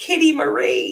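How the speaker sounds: put-on very high, loud, tearful crying blurt. Retelling blurting out as a crying child: imitating a crying blurt. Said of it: "And I blurted out".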